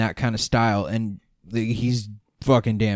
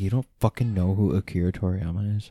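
ordinary delivery

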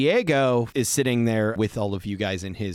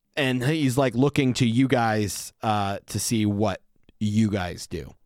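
ordinary delivery

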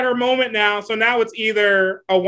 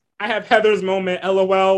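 ordinary delivery

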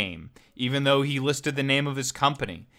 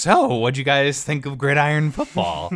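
play-acted nervous, shaky wobble, yet imposing; 4 dB louder than usual. Retelling a video where someone questions two friends on camera, imitating a shaky, nervous voice. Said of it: "the voice sort of shaky, sort of nervous".

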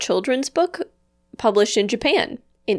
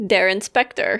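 usual speaking voice

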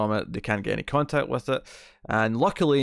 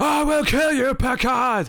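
menacing, drawn-out, very high and loud; 5 dB louder than usual. Acting out a Klingon threatening the captain: imitating an angry Klingon. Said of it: "I sense he's very angry".

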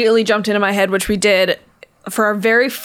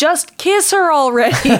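acted-out, high-pitched screaming; 7 semitones higher than usual. Speaker recalls a woman in the front row during an improv scene, retelling a scream. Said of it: "just started screaming".

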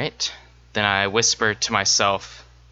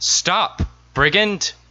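very high-pitched shouted yell; 10 semitones higher, 4 dB louder than usual. Chasing a fleeing person over a hill, in character: yelling. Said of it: "And I'm gonna yell".

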